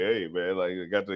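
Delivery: edgy, nervous, uneasy way of talking. Imitating the other speaker looking around on the show: mock nervous. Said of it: "I mean nervous like you".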